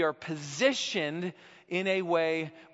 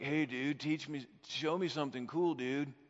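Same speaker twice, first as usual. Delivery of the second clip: put-on surfer dude voice, quieter; 5 dB quieter than usual. Acting out asking the Lord to teach something, in a surfer dude voice. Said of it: "that's my surfer voice".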